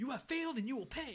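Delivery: acted-out shrill, very high, loud angry rant. Retelling a movie scene where Tony goes off on someone: imitating Tony ranting angrily. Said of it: "He's going off".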